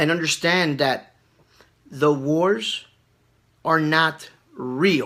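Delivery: slow, halting, broken, deliberately spaced-out phrases. Speaker addressing viewers so they can understand, speaking slow. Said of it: "I'm speaking slow like this".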